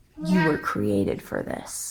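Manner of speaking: slow, leaned-in, hushed near-whisper. Showing how to drop a one-liner after a pause: slow, lowered voice. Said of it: "you drop that one-liner like that".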